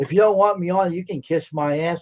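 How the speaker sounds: usual speaking voice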